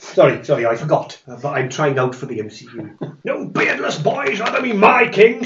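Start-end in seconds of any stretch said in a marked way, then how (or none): 3.2-5.4 very high, angry, furious, defiant shout. Voicing King Lot refusing the new king: Lot shouting. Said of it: "shouts Lot".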